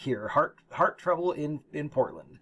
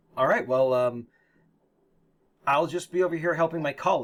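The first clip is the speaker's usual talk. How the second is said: coyly playing innocent, very offhand. Voicing a character in a game scene: coy. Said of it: "she says that very coyly".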